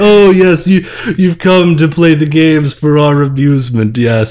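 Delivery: hoity-toity mid-Atlantic accent. Describing the angels who host the game, in a Thurston Howell III mid-Atlantic accent. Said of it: "have mid-Atlantic accents".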